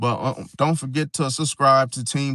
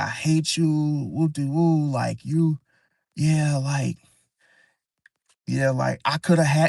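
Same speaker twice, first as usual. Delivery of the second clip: mock angry ranting with cursing; 2 semitones higher than usual. Retelling how she started cussing him out: imitating someone cussing him out. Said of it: "cussing me out".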